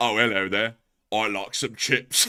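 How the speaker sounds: put-on British accent, casual chatty tone. Joking about a rock photo, imitating a british person. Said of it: "your average Brexit case would be like".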